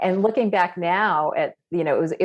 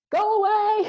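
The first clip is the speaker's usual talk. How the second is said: acted frantic, panicked scream, very high. Retelling when others tried to come through the door: retelling a scream. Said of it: "I'm freaking out and I'm screaming".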